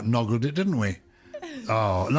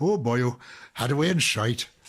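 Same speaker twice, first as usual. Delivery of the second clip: put-on Welsh accent. Speaker offers to repeat a phrase in another version, in a Welsh accent. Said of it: "can I do my Welsh version now?".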